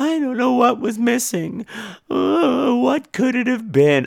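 very high, pitiful, helpless, pathetic lost voice. Mocking a friend's earlier call by imitating his voice: imitating a pathetic lost voice. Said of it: "could you have sounded more pathetic and lost?".

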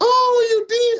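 very high, loud nasal voice. Retelling an argument over rushing stats with John, imitating John's nasal voice. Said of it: "He has a nasally voice".

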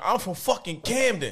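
high-pitched hollered scream. Imagining hearing a stranger somewhere outside philly, imitating someone screaming. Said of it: "heard somebody screaming".

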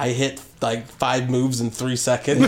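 ordinary talk

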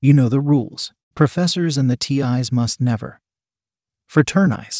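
plain reading voice

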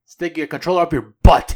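weird taunting voice. Imitating a big rock character's line: imitating the rock guy's weird voice. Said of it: "it sounds all weird like that".

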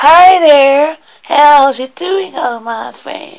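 high, slow, bad American accent. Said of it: "Can you do an American accent?".

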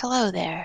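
whispering very softly. Whispering softly into a tree's bark as if into an ear: whispering very softly. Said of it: "I just whisper very softly".

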